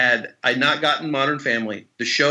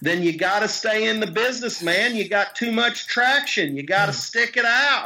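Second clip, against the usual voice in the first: put-on Oklahoma accent, pitched higher; 7 semitones higher than usual. Retelling a phone call with an actor friend from Oklahoma: Marshall Bell impression, Oklahoma accent. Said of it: "he's from Oklahoma, and he talks like this".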